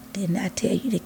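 soft, gentle voice. Retelling how God reminded the speaker of a warning, God's soft voice. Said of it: "real soft voice".

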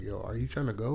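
mimicked whisper. Retelling a scene where guests quietly ask each other about leaving: imitating people whispering.

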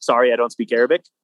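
ordinary delivery

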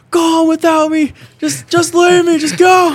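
slow, dramatic, very loud, high, drawn-out screaming. Retelling how a man who tripped during a gas leak screamed: retelling his screaming. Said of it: "And he's screaming".

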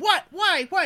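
mock, loud, very high-pitched shriek. Recounting her reaction to Maria telling her to check messages, retelling a scream. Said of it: "And I'm screaming".

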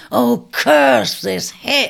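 loud, rough shout masking pain. Narrator reads a man who has just fallen badly, shouting, masking the pain. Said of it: "he shouted, masking the pain".

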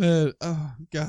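laughing hard, crying with laughter. After voicing someone as Italian for fun, laughing to tears. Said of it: "I'm in tears".

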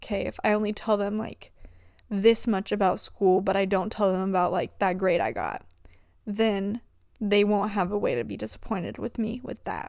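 usual speaking voice

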